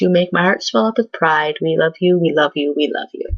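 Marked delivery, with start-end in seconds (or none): none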